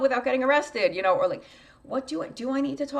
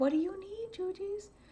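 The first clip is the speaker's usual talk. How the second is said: high, very comforting, soothing, reassuring voice; 7 semitones higher, 8 dB quieter than usual. Retelling how she asks herself a question, imitating a comforting voice. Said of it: "in this very comforting voice".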